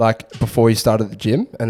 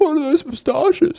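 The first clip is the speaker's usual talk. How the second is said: put-on drunk man's voice, laughing, pitched higher. Retelling what a drunk, laughing party guest said: imitating a drunk man laughing. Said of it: "he was just laughing his head off".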